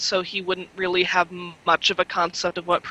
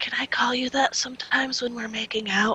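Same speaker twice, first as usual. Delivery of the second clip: high, intimate whisper; 5 semitones higher, 4 dB quieter than usual. Narrating a story where Clark leans in close to her: whispering. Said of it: "and he whispers".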